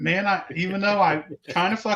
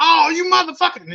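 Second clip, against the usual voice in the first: mock, very high, shrill, enraged screaming; 10 semitones higher, 7 dB louder than usual. Retelling how a man reacted when something blew up under his car, imitating angry screaming. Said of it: "This dude starts screaming".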